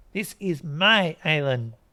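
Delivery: slow, loud, drawn-out hiss. She returns to the struggling stranger with a wasp's nest, hissing. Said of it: "she hisses".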